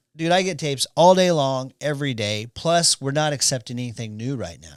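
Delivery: normal talking voice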